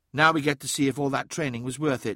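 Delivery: ordinary delivery, nothing marked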